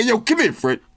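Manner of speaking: swooping, animated, slangy street voice.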